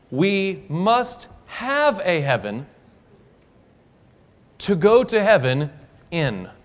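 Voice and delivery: slow, deliberate, every word laid out carefully. Repeating a quoted sentence for listeners who missed it: said slowly. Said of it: "We're gonna say it slow".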